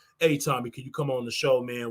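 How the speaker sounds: deliberately dropped, very low, put-on deep voice. Imagining asking Tommy to come on the show, put-on deep voice. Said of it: "put on my deep voice and be like".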